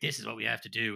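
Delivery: put-on deep French accent. Retelling a scene where Raiden addresses everyone on a boat, Raiden's deep French accent. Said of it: "this really deep French accent".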